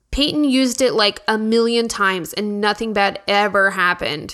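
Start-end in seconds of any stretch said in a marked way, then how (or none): none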